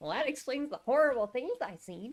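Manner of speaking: acted, very high, bouncy, sunny carefree delivery. Mimicking how a character says a line: mock happy-go-lucky delivery. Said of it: "He says it so happy-go-lucky".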